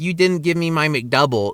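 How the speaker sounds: ordinary delivery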